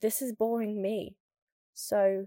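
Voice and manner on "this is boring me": usual speaking voice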